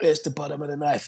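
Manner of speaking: put-on wrestler-style ranting voice. Retelling how Taz delivers a rant about cliches: imitating Taz ranting. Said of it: "Taz delivers it".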